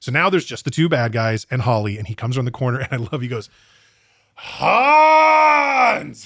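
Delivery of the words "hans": very high, shrill, stretched-out yell. Speaker recounting a film scene where a character comes around the corner, retelling a yell. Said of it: "the way he yells it".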